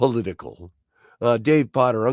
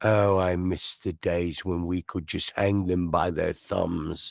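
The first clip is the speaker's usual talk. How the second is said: slow, drawn-out way of talking; 5 semitones lower, 5 dB quieter than usual. Recalling a line from the first Harry Potter movie: Harry Potter groundskeeper voice. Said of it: "he talks like this and he says".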